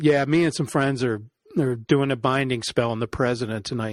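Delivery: plain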